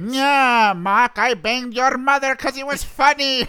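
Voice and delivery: high, loud cartoon villain voice. Making a character cartoonishly evil, speaker voices him: Skeletor voice. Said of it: "the fucking Skeletor voice".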